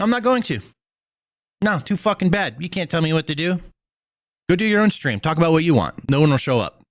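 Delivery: high, angry, defiant tone. A streamer answers a viewer who told him to stop yelling, defiant angry yelling. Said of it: "You just stop yelling?".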